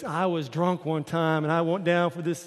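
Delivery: put-on slow, drawling Texan accent. Speaker quotes a man telling about a dive, in a Texan accent. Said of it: "I'm talking like a Texan".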